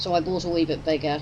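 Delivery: ordinary talk, nothing marked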